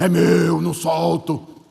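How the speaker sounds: deep, slow, thick, rough, coarse demon voice. Retelling a deliverance prayer, the devil speaks: imitating a demon's thick voice. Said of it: "aparece com aquela voz grossa e ele fala assim".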